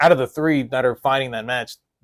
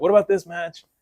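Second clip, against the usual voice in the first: mock screaming, higher pitch; 5 semitones higher than usual. Imagining viewers reacting to the video: imitating viewers screaming. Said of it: "they're screaming".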